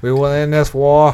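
put-on booming, loud, high, light Boston politician accent. Retelling what he said about ending the war, with a little JFK accent. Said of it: "He had a little JFK accent going on".

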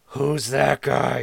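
creaky aside, out of the side of the mouth. Narrator voices a character turning to a companion, speaking out of the side of his mouth. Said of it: "moving his lips to the side of his face".

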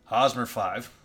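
deadpan, flat, unenthusiastic mumble with zero excitement. Listing an opening day lineup, the speaker names the last player, unexcited. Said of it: "Don't sound so excited".

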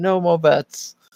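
acted high screaming. Retelling a drunk night at roulette: imitating Jordan screaming. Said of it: "Jordan was just screaming".

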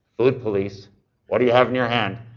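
teasing, playful joking yell. Retelling calling down a store aisle to a client: imitating a joking yell. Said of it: "just jokingly, I yelled down the aisle".

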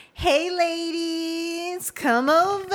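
very slow, drawn-out, high-pitched voice. Retelling a bar night, she imitates the bartender calling them over: shenanigans voice. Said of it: "she got that shenanigans voice".

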